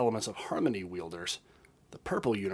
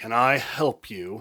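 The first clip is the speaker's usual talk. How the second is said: very loud, very slow, drawn-out annoyed voice; 8 dB louder than usual. Reading a story, a character snaps a question in an annoyed voice. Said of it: "in his best annoyed voice".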